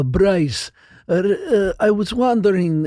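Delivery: put-on heaviest stock Russian accent, slow and thick. Retelling a Russian fan starting a question to a fighter, thick Russian accent. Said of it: "just like the thickest typical Russian accent".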